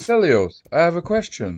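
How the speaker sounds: relaxed friendly tone. Asking a pretend question while imitating Hussein's calm voice. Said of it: "I was just trying to speak like Hussein".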